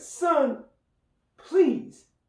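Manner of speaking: mock very high, pleading voice. Retelling a mother sending him upstairs to rest: imitating a pleading mother. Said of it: "with a plea in her voice".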